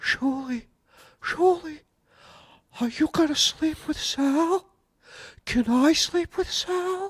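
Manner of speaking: high-pitched whispered voice. Reading a viewer's request in the known voice: whispering high-pitched voice. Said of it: "in a whisper, you know the voice".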